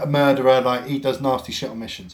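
ordinary talk, nothing marked

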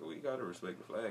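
soft, half-voiced mumble under the breath. Retelling how a man in the corner answered; imitating someone mumbling. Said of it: "kind of mumbling".

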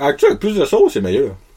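talking with mouth full, chewing. Eating and talking to listeners between bites, talking with mouth full. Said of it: "on va pas de la bouche pleine".

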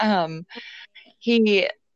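usual speaking voice

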